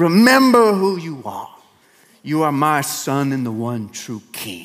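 slow, drawn-out, sultry voice. Quoting the father's ghost speaking from the clouds: James Earl Jones voice. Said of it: "James Earl Jones' sultry voice".

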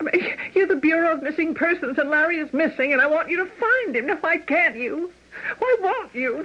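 pleading tone through tears, crying. Begging the Missing Persons captain to find a missing man: crying. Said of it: "now stop crying".

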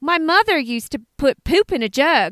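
put-on American accent. Giving a direct quote from a woman on Hoarders, imitating Shanna in an American accent. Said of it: "that's a great accent".

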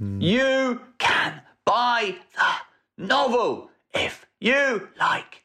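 very high, switching shout and whisper each word. Asked to shout and whisper every other word, the speaker does so. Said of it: "shout and whisper every other word".

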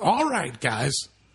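intense, rousing delivery. Guessing how a tech team owner sounds: Steve Ballmer impression. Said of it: "I imagine it's something like this".

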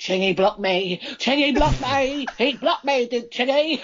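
put-on high old-woman character voice. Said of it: "Do my Ethel voice again".

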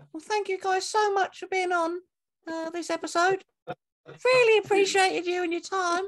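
very high-pitched tone. Saying goodbye to the guests after being asked: saying goodbye in the dog-calling voice. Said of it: "do you wanna say goodbye in that voice?".

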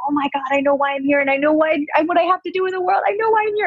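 acted out, very high pitched, escalating, climbing scream. Retelling what she said during a healing session: retelling own screaming. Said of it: "And I'm screaming".

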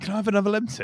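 squeaky, very high-pitched voice. Retelling Simone asking for another Lemsip: imitating Simone asking for Lemsip. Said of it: "She'd be like".

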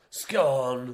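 scone said loud, whooshing past like a speeding car. Saying the word scone like a fast car going past: scone whooshing past like car. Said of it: "That's me saying scone, but like a fast car going past".

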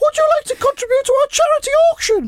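very high, dainty put-on lady's voice. Retelling a lady's charity auction request at a celebration, in a put-on lady's voice. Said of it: "That's me doing my lady's voice there".

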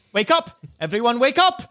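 loud, high, rousing shout. Game master voicing a character kicking a sleeper awake, yelling to wake everyone. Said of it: "when she starts yelling at everyone to wake up".

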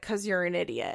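put-on flat, matter-of-fact tone. Retelling how someone insulted another person: imitating a matter-of-fact insult. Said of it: "he didn't even say it like that angrily. He said it like a fact".

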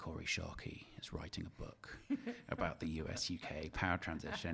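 put-on grave, solemn, very somber, hushed and slow. Retelling what a mutual acquaintance said to him over lunch, imitating a very somber tone. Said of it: "he said to me in this very somber tone".

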